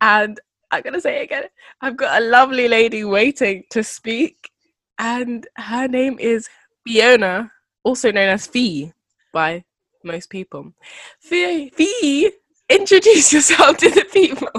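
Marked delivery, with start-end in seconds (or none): 11.2-14.6 high voice, cracking and breaking on the words. Host introduces a guest to the listeners, voice cracking. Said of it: "So many voice cracks".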